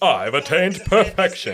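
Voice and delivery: loud and smug. Quoting perfect Cell from the Abridged series: smug, confident Cell voice. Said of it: "It's the best English Cell voice".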